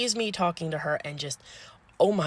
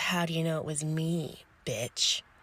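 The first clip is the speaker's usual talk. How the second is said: mock eye-rolling tone, quieter and slower; 6 dB quieter than usual. Retelling how Sassy answered being told off, imitating Sassy's eye-rolling retort. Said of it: "rolls her eyes and goes".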